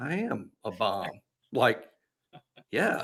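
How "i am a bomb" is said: very slow, unbothered, matter-of-fact tone. Retelling what a quarterback said back to praise: imitating a matter-of-fact statement. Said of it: "he said it like that".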